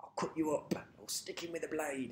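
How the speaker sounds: very soft, hushed, put-on cockney geezer voice. Chatting about Comic Strip Presents, a speaker does a Cockney geezer voice. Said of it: "the Cockney geezer".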